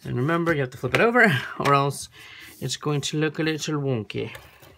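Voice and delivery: horrible, bad put-on British accent. Explaining that a cut piece must be flipped over: horrible British accent. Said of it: "that was my horrible British accent".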